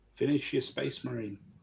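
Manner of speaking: faint, tiny, high little voice from far off. Telling another speaker to finish their model: small voice from far away. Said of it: "That sounded like this really small voice from far away".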